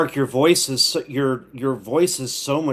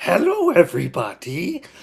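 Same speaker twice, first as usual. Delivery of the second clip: high, sing-song character voice swooping around; 5 semitones higher than usual. Echoing a greeting after suggesting a Grover impersonation: Grover voice. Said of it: "you gotta do a Grover impersonation".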